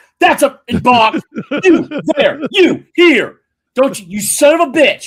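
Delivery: very high, very loud, shrill furious tirade. The speaker acts out an umpire calling a balk; imitating an angry umpire. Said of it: "why do umpires get so mad?".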